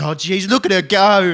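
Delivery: high, very loud emotional outburst, swelling out slowly. Retelling a video of a commentator watching a horse race: imitating Bruce McAvaney getting emotional. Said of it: "he's getting all emotional".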